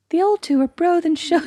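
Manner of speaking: high-pitched voice. Showing the other speaker how the line should go, in a high voice. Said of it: "you've forgotten your high voice".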